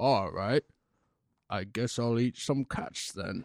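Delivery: alien voice, slow and deliberate. Joking that a famous actor voiced Alf: Michael Caine as Alf. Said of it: "Michael Caine was the voice of Alf".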